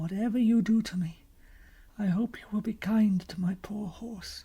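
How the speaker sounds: frail, faint, feeble, weak voice. Narrator reads a captive's plea to the gentlemen holding him: feeble voice. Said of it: "said Caspian in a feeble voice".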